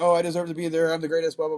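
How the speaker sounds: ordinary talk, nothing marked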